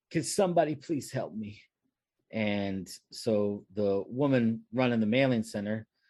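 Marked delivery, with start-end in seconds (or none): 0.1-1.6 crying, tearful, pleading voice. Retelling a story from working the store register, imitating someone crying. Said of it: "She was crying and she says".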